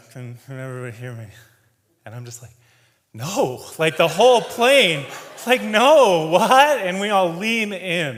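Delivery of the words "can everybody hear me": quiet mumbling under the breath. Retelling the pilot's announcement on a quiet, bumpy flight, imitating a mumble.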